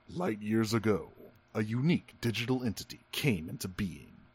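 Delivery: deep, hushed film-opening movie narrator voice. Quoting the opening narration over a montage through space, deep narrator voice. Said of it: "let me try to like get my voice as deep as this guy does".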